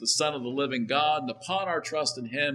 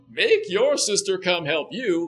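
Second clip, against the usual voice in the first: mocking, teasing put-on posh British accent; 4 semitones higher, 5 dB louder than usual. Speaker imagines how Jesus did not answer Martha: put-on mocking Jesus voice. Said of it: "mocking tone".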